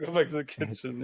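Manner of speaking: plain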